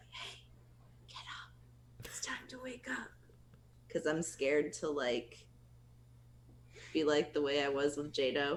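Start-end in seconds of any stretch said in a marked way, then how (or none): 0.1-3.1 very quiet, nervous, timid whisper. Speaker acts out how they wake him up, scared to wake him: whisper. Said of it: "I'll just kind of whisper".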